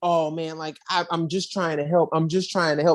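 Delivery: put-on tearful, crying voice.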